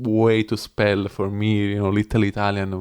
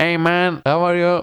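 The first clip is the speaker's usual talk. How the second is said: put-on relaxed American accent, pitched up; 9 semitones higher, 4 dB louder than usual. Asked by the other speaker to do one: American accent. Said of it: "do an American one".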